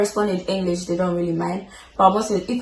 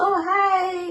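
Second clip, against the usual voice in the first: very high, fake, put-on phone voice; 11 semitones higher than usual. Retelling greeting a relative on the phone: put-on voice greeting a relative. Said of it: "you have to put on that voice".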